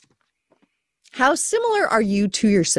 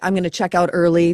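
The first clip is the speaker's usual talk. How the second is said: usual speaking voice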